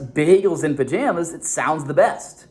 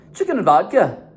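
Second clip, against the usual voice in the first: Scottish-accented delivery; 4 semitones higher than usual. Showing how one would order a dish: Scottish accent. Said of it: "with, like, this Scottish accent".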